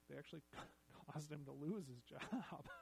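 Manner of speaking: soft voice, laughing through the words.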